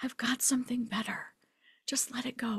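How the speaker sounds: soft, gentle, unvoiced whisper.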